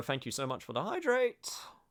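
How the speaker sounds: voice cracking. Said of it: "that was a good voice crack".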